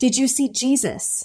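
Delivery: thrilled, bursting, excited, eager tone. Retelling a woman at an open house asking a question: imitating someone excited. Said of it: "she was so excited".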